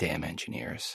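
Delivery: very soft muttered curse under the breath.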